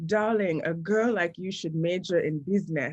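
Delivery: put-on heavy, thick West African accent, laid on. Quoting her father's advice about what to major in, in his thick African accent. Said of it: "in his like thick African ans- accent".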